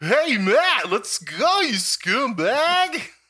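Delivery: sarcastic internet-style mock voice, high, loud, drawn-out.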